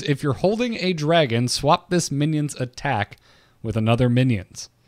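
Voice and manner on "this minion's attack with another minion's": normal talking voice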